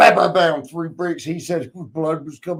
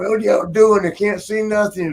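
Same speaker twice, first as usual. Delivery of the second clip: mild, half-hearted mock scream; 4 semitones higher than usual. Retelling how Pat, left behind in the dark, was imitating Pat screaming. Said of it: "he's screaming".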